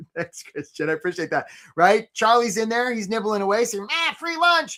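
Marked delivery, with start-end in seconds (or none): 3.9-4.8 little crab voice, way up high. Telling a story about a crab at a bait pot: Charlie the crab voice. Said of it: "Charlie sounds like this".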